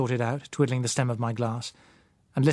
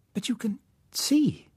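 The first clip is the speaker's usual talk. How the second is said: very high, slow, disbelieving; 11 semitones higher than usual. Coming out of her daze, she realizes the narrator can see, incredulous. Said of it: "she said incredulously".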